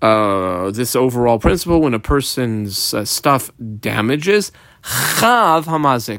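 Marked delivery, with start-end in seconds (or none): 4.8-6.2 chav drawn out slowly and stressed. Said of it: "I squiggle on the word Chav".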